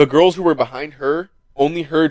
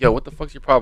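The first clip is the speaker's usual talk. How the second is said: calm non-attacking tone, quieter; 3 semitones lower, 6 dB quieter than usual. Retelling turning around to people kicking him, retelling a calm, non-attacking question. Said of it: "Not even in an attacking tone".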